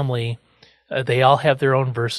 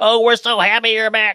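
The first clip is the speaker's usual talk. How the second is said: mock overjoyed, high, gushing group screaming; 9 semitones higher than usual. Retelling how a family greets a returning grandpa: imitating characters screaming. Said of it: "everybody starts screaming at Grandpa".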